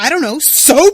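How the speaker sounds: mock furious, very loud exclamation. Retelling a Friends scene where Ross answers a question: imitating Ross angrily.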